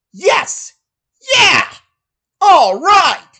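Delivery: big, exaggerated sing-song cartoon-style voice. Called a Sonic voice actor, the speaker gives impressions: Sonic the Hedgehog impression. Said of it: "allow me to give you my impressions".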